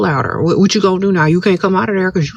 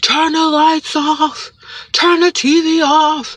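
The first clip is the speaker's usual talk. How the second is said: acted man screaming, higher; 9 semitones higher than usual. Retelling how a neighbor in the next room kept yelling: imitating a man screaming. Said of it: "he kept screaming and yelling".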